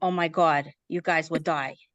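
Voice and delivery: put-on New York accent. Telling stories about a crazy childhood home, imitating mom's new york accent. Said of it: "mom was a New Yorker".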